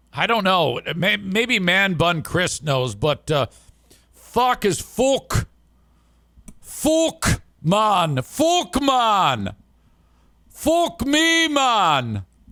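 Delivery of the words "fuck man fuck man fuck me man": put-on British accent, higher pitch. Retelling how the coach swore at the visiting team: imitating Coach Ruff's British accent. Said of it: "where in the U K he's from".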